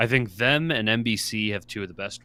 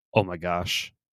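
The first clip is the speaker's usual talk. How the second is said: muted, understated, low-key throwaway exclamation; 3 semitones lower than usual. Retelling an announcer's reaction as the ref sets the ball: imitating Tony Romo saying it quietly. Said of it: "he just very kinda quietly goes".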